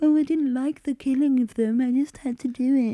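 scornful, sarcastic, high-pitched, mocking self-pitying voice. Mocking a beheaded killer's last words: mocking imitation of a killer's excuse. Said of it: "doing the whole Jeffrey Dahmer, like".

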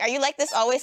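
ordinary talk

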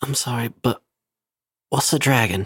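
hushed, leaned-in half-whisper. Voicing a character leaning over to ask another character: half-whispering. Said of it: "just in a whisper is like".

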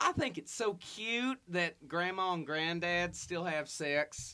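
put-on Texan accent. Giving someone's exact quote in a put-on Texas accent. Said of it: "if I can maybe do a Texas accent".

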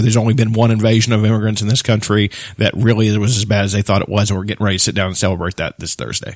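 ordinary talk

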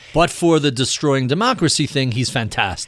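ordinary delivery

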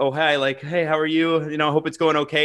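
usual speaking voice

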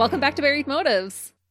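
rushed, rattled-off, fast, loud and high. Podcast host opening the episode, talking fast. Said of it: "That's really fast".

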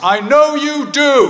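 very loud, high-pitched call. Retelling the dad calling out as the speaker leaves the hospital ward: loud voice. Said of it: "in a loud voice".

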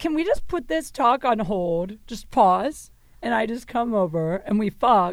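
plain

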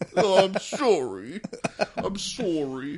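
very slow, apologetic Canadian manner. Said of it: "In his Canadian way".

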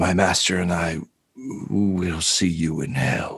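low, soft mumbling under the breath. Voicing a dying warlock slumping against a player: muttering.

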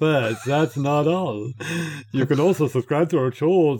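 terrible, clumsy put-on French accent. Reading a line aloud after another speaker asks for it: terrible french accent. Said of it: "your terrible French ones".

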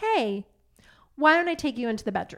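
hushed, quiet, very calm, even-keeled voice. Retelling how mom came in during a dinner party: imitating mom speaking quietly, calmly. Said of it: "my mom came in quietly, very calmly".

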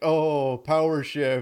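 mock, loud, sarcastic, dismissive scoff. Retelling how people scoff at a minor move: imitating a sarcastic remark.

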